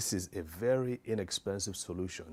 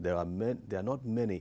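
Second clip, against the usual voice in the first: plain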